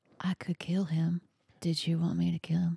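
hushed, just a whisper. Playing a character in the game, the speaker whispers to another character. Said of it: "I'm going to whisper to him".

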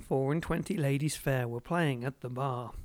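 plain reading voice

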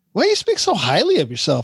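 put-on speech through a laugh with swooping pitch. Retelling what the wife asked: imitating someone laughing while talking. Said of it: "in a laughing voice".

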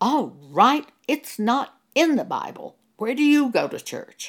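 sudden, loud, furious, angry shout. Retelling what an angry pastor shouted: imitating an angry shout. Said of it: "he shouted at me".

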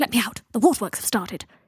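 hissing. Locked in a room, he calls through the door to be let out, hissed. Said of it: "he hissed".

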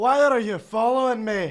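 put-on ogre voice with Scottish accent. Recording a script take with others, Shrek voice. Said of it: "I have a fairly killer Shrek voice".

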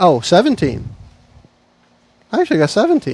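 surprised, caught off guard and taken aback. Rolling dice with the group during a game, surprised. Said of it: "You sound surprised".

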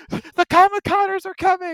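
high, loud mock alarm cry.

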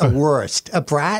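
"bratwurst", "wurst" said in upstate New York accent. Saying the word again for confused listeners: upstate New York accent. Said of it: "I'll say it like they do in upstate New York".

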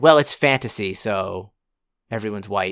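plain

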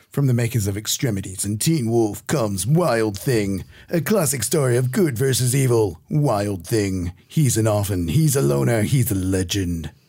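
dramatic movie trailer announcer narration voice. Reading the blurb on a video's back cover aloud, in a movie trailer voice. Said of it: "nice trailer voice".

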